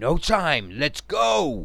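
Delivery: loud, drawn-out cry. Santos calls to Jack, who is caught in a trance, voice raised in a cry. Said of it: "Santos called out, his voice raised in a cry".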